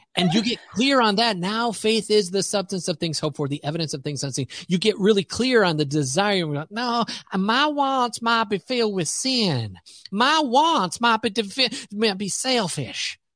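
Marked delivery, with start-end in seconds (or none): 6.7-13.1 put-on slow, higher-pitched Southern accent. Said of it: "I went to a Southern accent".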